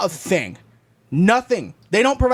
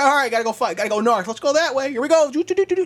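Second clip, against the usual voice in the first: small bird character voice; 4 semitones higher than usual. Acting out a pigeon setting off with its compass: voicing a pigeon. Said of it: "pulls out his Boy Scout compass".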